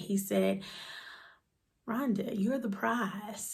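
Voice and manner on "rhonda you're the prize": hushed, soft, quiet words in passing. Retelling what dad said quietly at a funeral: imitating someone speaking quietly. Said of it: "he said it so quietly".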